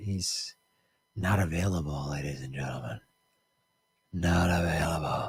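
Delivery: low, soft, creepy, eerie voice. Show host telling the audience a guest is unavailable, in a low, creepy voice. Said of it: "I don't know why I'm speaking in such a low, creepy voice".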